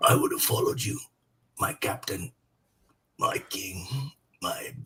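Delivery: faint, breathy whisper like a last breath. Performing a dying character's line as an impression: Sean Bean voice. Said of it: "That's actually most of Sean Bean".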